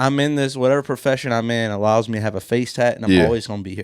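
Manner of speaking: plain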